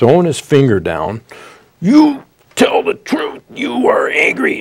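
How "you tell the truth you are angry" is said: very high, shrill, drawn-out, hectoring scolding scream. Retelling how an anger management teacher screamed at him: imitating someone screaming. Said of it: "he's just screaming and yelling at me".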